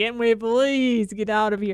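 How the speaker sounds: put-on begging, childlike pleading. Acting out a bored child hanging off mom's arm, imitating a pleading little kid. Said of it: "pleading out of like sheer death of boredom".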